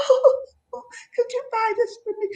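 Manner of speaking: put-on very high, soft, tiny, girly pleading voice. Speaker imitates how little cute women talk to men: little cute voice. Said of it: "she's got that little voice".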